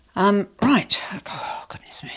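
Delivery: breathless, whispery, gasping between breaths. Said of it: "hence out of breath".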